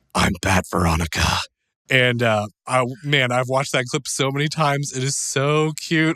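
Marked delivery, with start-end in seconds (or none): 0.2-1.3 very deep, low put-on hero voice. Retelling a daughter's line while doing a Veronica impression in Batman voice. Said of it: "the Batman voice pattern".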